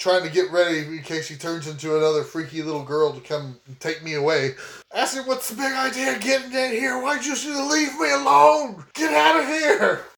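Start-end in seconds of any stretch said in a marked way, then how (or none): 5.3-10.0 high, angry yelling. Playing a game, the speaker confronts a deputy; yelling at the deputy. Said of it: "I'm gonna start yelling at this deputy".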